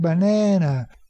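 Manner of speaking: second syllable na of banana stressed, drawn longer. Teaching English word stress, stress on na in banana. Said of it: "In the second syllable is na, banana. That second syllable is longer, higher pitched, and even a little bit louder".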